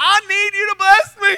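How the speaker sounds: high, loud, needy pleading voice.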